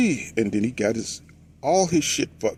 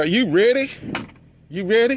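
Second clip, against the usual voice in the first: put-on Texas accent, pitched up; 9 semitones higher, 3 dB louder than usual. Telling a story, showing how they talk in texas, texas accent. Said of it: "That's my Texas accent".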